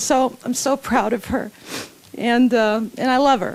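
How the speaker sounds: tearful voice, crying while speaking. Introducing a beloved before her memorial toast, crying while speaking. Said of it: "I'm crying".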